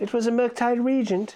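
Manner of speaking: put-on old English boy voice. Joking about a card name, voicing a peasant kid in old england: peasant kid in old england voice. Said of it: "like a peasant kid in, like, old England would say".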